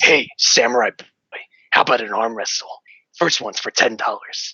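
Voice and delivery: low, deep put-on character voice. Voicing a character's line after a moment to prepare, in a deep voice. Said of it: "It's kind of a deep voice like this".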